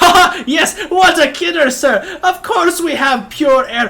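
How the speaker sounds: fake hearty laugh, very high, shrill, loud. Voicing a nervous merchant covering a customer's blunder: forced loud laugh. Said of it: "leans back and goes".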